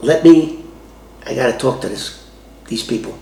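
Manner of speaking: ordinary talk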